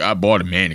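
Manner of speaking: very deep, manly, macho voice. Mocking a guy in a clip who bought a mannequin: imitating a very manly voice. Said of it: "the manliest voice".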